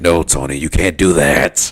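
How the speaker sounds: loud, heavy growl in the voice. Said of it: "he had got, like, a growl in his voice".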